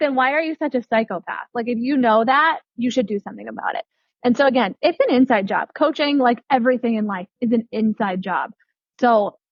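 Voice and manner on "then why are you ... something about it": ordinary talk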